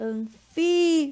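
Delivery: stress on fi in anfíbios. Teacher explaining the written accent in anfíbios: stress on fi. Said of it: "o fi a gente fala mais alto".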